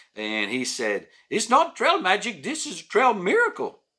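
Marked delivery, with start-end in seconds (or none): 1.3-3.8 terrible fake Czech accent, very high pitch. Quoting a man who was fed on the trail, in a terrible czech accent. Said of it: "terrible Czech accent".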